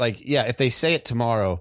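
ordinary talk, nothing marked

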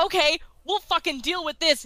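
ordinary delivery

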